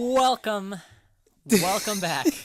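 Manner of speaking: very loud, high, booming game-show host announcer voice. Podcast host opening an episode of the show: game show host voice. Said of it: "You sound like a game show host".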